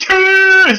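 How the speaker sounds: high, very loud, sudden yell.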